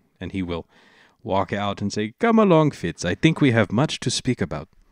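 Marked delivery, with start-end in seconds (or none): 2.2-4.7 put-on sing-song Indian accent drifting toward African. Voicing a character leaving the room with Fitz: put-on Indian accent. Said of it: "the Indian accent that I'm going for".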